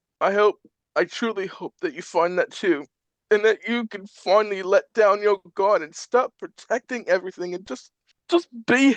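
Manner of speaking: weak, strained from crying. Voicing a recorded message to an old friend: weak, strained from crying. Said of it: "weak and a little strained from crying".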